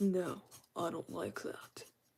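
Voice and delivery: put-on gorilla voice. Speaking as their own hand while coloring a drawing, in a gorilla voice. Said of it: "I was making the gorilla voice".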